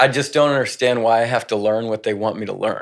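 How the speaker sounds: plain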